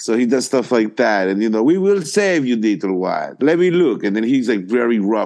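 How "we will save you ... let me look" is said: put-on, high, swooping Eastern European accent. Describing a man who talks like he's foreign, the speaker quotes him in an Eastern European accent. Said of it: "He does this like he's Eastern European".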